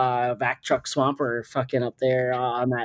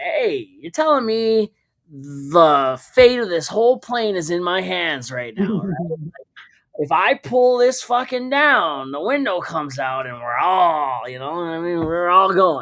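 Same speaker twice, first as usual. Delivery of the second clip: put-on drunk talk, higher; 4 semitones higher than usual. Retelling joking around in a plane's emergency exit seat: imitating drunk talk. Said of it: "I'm drunk, right?".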